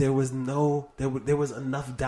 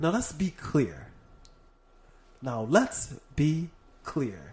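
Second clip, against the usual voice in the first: slow, deliberate cadence, every phrase placed with care. Trying out an impression's speech rhythm: Obama's cadence. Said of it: "His cadence".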